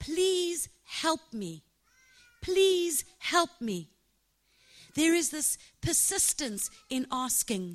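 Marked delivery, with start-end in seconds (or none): 0.0-3.9 put-on repeated begging, pitched up. Speaker retells how a woman begged for help, acting out her begging. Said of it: "She was begging".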